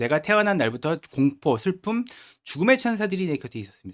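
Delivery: plain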